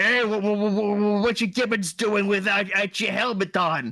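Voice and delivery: very slow, dragged, high orc voice. Telling a story about orcs fixing a spaceship without helmets, orc captain voice. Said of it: "the one orc captain is like".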